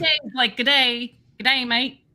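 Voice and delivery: imitated Australian accent. Showing the others on the show an Australian accent. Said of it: "That's my Australian accent".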